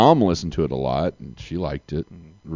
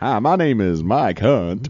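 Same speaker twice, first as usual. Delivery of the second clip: cheesy, pitched-up commercial pitchman voice; 5 semitones higher than usual. Speaker redoing a commercial they once ran, cheesy commercial voice. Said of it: "in this cheesy voice".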